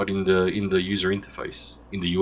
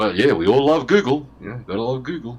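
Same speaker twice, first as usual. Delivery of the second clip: sarcastic, mock-enthusiastic praising tone. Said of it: "a bit of sarcasm there".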